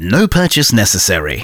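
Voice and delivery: sing-song small-print announcer read. Explaining a giveaway on a live show, put-on disclaimer voice. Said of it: "I like doing this voice".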